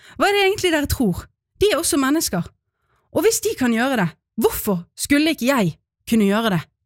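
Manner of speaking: fast, breathless, high outburst.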